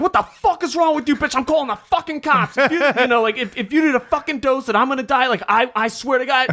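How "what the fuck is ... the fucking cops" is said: put-on furious scream, much higher. Retelling his reaction after a woman said she killed him, retelling a furious scream. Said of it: "you're screaming at this fat bitch".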